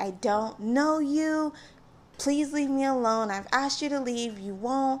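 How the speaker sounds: high, urgent, forceful screamed outburst. Retelling screaming through a cracked car window at an aggressive man, re-enacting own screaming. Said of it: "I started screaming like".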